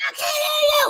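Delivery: mock screaming, shrill and very high. Retelling answering bill collectors on the phone: imitating own screaming. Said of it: "I used to just be on the phone screaming at them".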